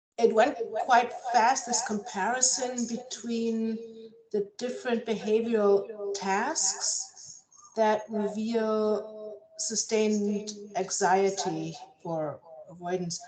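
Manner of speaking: carefully spaced-out words, slow and deliberate. An audience member asks a question over an echoing call, speaking slowly. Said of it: "so I'll speak slowly".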